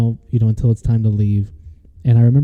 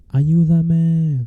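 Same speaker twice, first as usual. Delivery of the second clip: faint, distant, high-pitched whisper-yell; 6 semitones higher than usual. Telling a creepy story about a faint woman's voice heard: imitating a whisper yell. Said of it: "it was a whisper yell".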